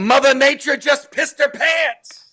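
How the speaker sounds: high, shouted-out yelling. Retelling a movie character's line as he yells it out: imitating a yell. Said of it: "when he yells out".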